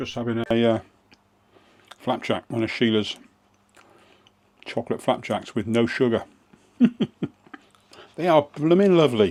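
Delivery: munching while speaking. Speaker talking about bikes while eating a chocolate flapjack, mouth full. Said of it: "Have to excuse me munching".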